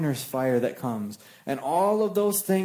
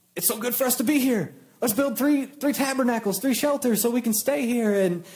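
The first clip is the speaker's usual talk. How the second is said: put-on stammering voice, much higher in pitch; 7 semitones higher than usual. Retelling Peter's words when Moses and Elijah showed up, imitating Peter stammering. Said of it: "sort of stammering and stuttering".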